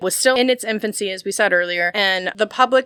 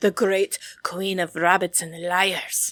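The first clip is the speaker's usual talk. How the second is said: put-on, wrong, Viking-like accent; 2 semitones lower, 4 dB quieter than usual. Repeat how the press worded its report on Mary, in a wrong accent, like a Viking. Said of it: "like fucking Viking or something".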